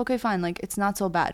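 ordinary talk

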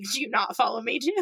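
joking tone. Retelling what you asked people you took a photo with, retelling a joking remark. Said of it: "I jokingly said".

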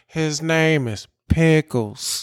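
gentle, mild-mannered delivery. Retelling how a man told them his dog's name, imitating a soft-spoken man. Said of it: "the way that he said it was just so soft".

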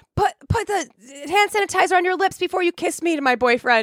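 very high-pitched, shrill, demanding scream. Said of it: "literally screaming at people".

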